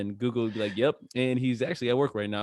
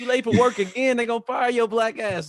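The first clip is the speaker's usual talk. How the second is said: put-on angry movie-star voice, higher pitched; 11 semitones higher, 4 dB louder than usual. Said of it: "a Samuel Jackson, you know, voice".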